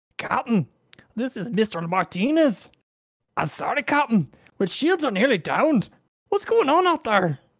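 put-on frantic Irish accent. Voicing a frantic engineer calling the captain about failing shields: Irish accent. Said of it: "apparently a guy named Martinez has an Irish accent".

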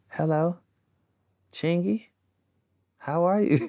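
soft, hushed, quiet voice. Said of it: "you hear this soft voice".

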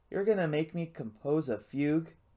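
ordinary delivery, nothing marked

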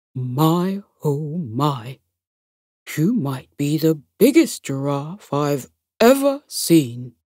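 deep, low, husky gorilla voice. A gorilla sits up and greets Dinky the giraffe in Thumper's deep, husky voice. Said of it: "commented in a deep, husky voice".

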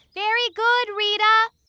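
yelling loudly. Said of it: "But you don't have to shout".

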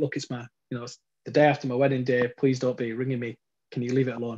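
ordinary delivery

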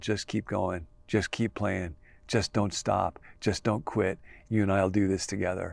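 spoken softly, very close.

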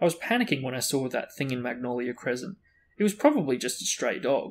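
ordinary delivery, nothing marked

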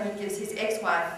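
ordinary delivery

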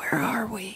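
hushed, breathed-out whisper. Retelling his first words after the breathing tube came out: imitating someone whispering. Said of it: "he looked at me and he whispered".

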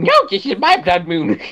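bad, very high cartoon kid voice. Playing a game as a blood moon starts, one player does a bad Cartman voice. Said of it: "What kind of voice was were you doing?".

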